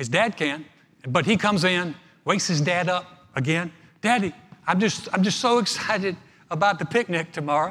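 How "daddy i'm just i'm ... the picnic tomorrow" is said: acted-out eager, gushing, excited little boy voice. Retelling a story, voicing the little boy at bedtime: imitating an excited little boy. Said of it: "The little boy's so excited".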